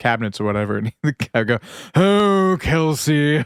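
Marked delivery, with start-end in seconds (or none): 2.0-3.4 pompous, blowhard theatrical actor voice, pitched up. Retelling what a guy would say to Kelsey, in a blowhard stage actor voice. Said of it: "this like blowhard stage actor".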